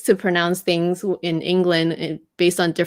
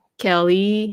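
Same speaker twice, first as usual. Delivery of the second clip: French-accented speech, said the French way. Trying to say a name the French way: French-accented Kelly. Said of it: "if I really had to say it the French way".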